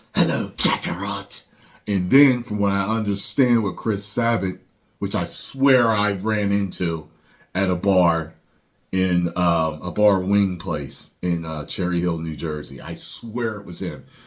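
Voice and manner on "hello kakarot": hiss-laden, grating, annoying delivery, every word hissed. Recalling Vegeta's first voice actor, who spoke like this: hissing Vegeta impression. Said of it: "his voice having an annoying hiss".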